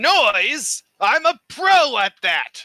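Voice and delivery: very loud, shrill screaming at full blast. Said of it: "Why do you have to scream so early?".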